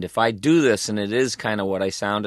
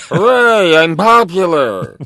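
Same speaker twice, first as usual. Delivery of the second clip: very high, very loud, shrill sing-song, big swoops; 10 semitones higher, 12 dB louder than usual. Speaker describing a favourite character who is a poor doctor: Zoidberg voice. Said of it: "That voice".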